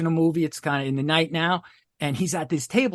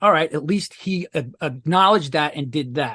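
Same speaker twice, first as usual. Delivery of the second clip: ordinary talk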